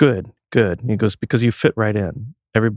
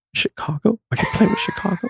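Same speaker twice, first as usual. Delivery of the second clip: mock very high voice on the verge of tears; 12 semitones higher than usual. Retelling a sister's reaction on the phone: imitating a teary voice. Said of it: "in, like, a teary voice".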